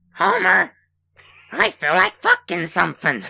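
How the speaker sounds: creaky animated housewife voice. Performing a requested sound bite in a Marge Simpson voice.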